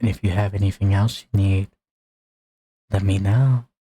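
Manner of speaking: whispering, close and hushed. Voicing the bartender as she whispers in the player's ear: bartender whispering. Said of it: "So the bartender's gonna walk over to you, / I don't know. They just come and post them. I just host them. But I do get a cut of the pay usually. / and she's gonna say, / So the bartender's gonna walk".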